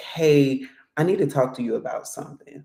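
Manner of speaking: grave, heavy, serious tone. Showing how someone sounds asking to talk about something: serious tone. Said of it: "you see that kind of tone in my voice".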